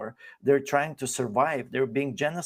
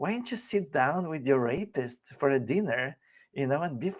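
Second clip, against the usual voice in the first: usual speaking voice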